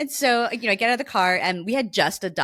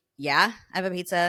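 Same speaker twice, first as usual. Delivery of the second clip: mock short, snippy, curt and snarky; 2 semitones lower than usual. Recounting a reply to a guy's condescending question: retelling a short, snarky reply. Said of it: "I'm just being kind of like short and snarky".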